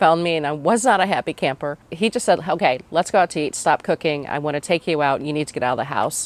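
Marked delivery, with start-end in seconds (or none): none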